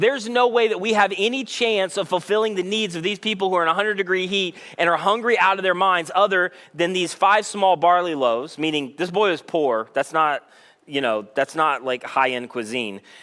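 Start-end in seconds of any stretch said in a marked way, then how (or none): none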